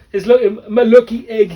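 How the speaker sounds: terrible put-on Jamaican accent. Retelling a story, the speaker quotes the man with the egg: bad Jamaican accent as Sanko. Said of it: "That's a terrible Jamaican accent".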